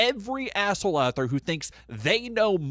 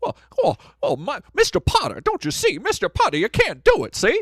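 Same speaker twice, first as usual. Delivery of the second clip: very high, swooping film-hero voice; 10 semitones higher, 4 dB louder than usual. Doing a scene from It's a Wonderful Life: Jimmy Stewart impression. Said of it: "That is my Jimmy Stewart impression".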